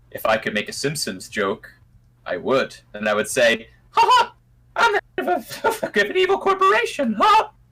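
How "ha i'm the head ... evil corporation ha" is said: pitch rising way up and bouncing. Riffing on a Simpsons-style joke with a co-host, in a Mickey Mouse voice. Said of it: "Although Bart didn't do it with a Mickey voice".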